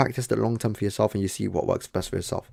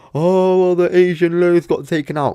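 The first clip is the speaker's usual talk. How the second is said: mimicked mocking tone, higher and louder; 9 semitones higher, 9 dB louder than usual. Retelling how a guy on the live call mocked him: imitating a mocking tone. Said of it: "mocking me".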